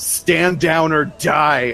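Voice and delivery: put-on big, slow, stern, commanding big-boy voice. A player's character orders a whole group to stand down, big stern voice. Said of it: "with my my big stern big boy voice say".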